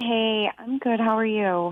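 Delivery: a little down, stressed, soft, subdued tone. Caller returning the host's greeting on air: sounding a little down. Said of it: "You sound depressed or stressed".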